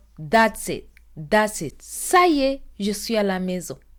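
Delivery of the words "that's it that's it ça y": usual speaking voice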